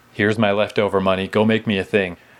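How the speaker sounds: normal talking voice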